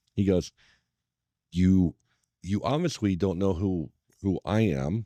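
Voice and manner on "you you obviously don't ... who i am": mock quiet, matter-of-fact menacing tone, lower. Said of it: "with his finger out and just talking low".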